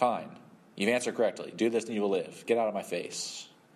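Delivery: put-on exasperated, fed-up, had-enough tone. Retelling a bible story, voicing the reply to the law expert, mock-frustrated.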